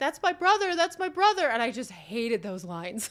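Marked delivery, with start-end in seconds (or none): 0.0-1.5 mock weepy, high, tearful crying delivery. Retelling a scene in which a character cries: imitating someone crying. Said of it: "he's, like, crying".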